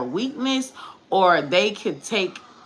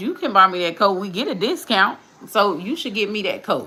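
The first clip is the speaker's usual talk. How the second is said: acted, playful, teasing, having fun, laughing. Retelling a request to a man about a coat: retelling own joking request.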